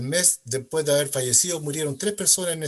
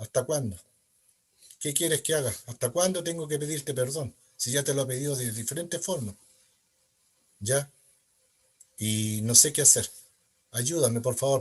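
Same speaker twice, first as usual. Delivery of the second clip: plain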